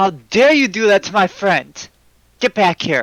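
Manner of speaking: loud, high, challenging shout. Voicing Saber calling out around the corner to an opponent: Saber calling out loudly. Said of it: "Saber's gonna call out around the corner".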